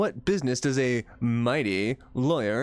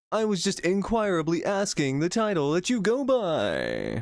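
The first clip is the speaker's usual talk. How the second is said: pompous, swooping game-show-host voice, drawn out, pitched up; 5 semitones higher than usual. Reading game dialogue aloud as one character: loud game-show-host voice. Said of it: "Why is this guy so freaking loud?".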